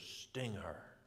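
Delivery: put-on German accent. Retelling what a man told the speaker, in his German voice: imitating a German accent. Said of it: "in his German voice".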